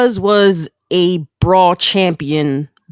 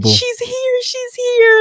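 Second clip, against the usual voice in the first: very high, excited crying. Retelling a phone call to a best friend: retelling crying excitedly. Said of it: "I'm sitting here crying".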